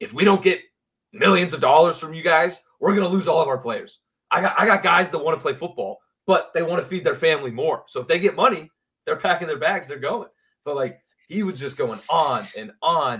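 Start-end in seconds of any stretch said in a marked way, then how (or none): 0.0-10.3 put-on loud, high-pitched shouting rant into a mic. Retelling a speaker on stage asking for money, imitating Gary yelling. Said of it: "he was basically just yelling".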